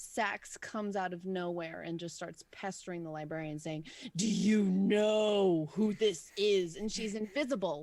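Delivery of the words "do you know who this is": deep, loud, very slow haughty voice, "know" stretched. Voicing Sax pestering the librarian in the story: deep voice. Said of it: "so you gave her a deep voice".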